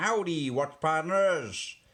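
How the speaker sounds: clumsy fake American accent. Opening greeting in an attempted American accent. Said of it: "that was my attempt at an American accent".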